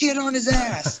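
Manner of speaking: put-on very high, sharp yell. Telling of his first round, when Josh yelled at his partner: imitating Josh's yell. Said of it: "Josh yells at my partner".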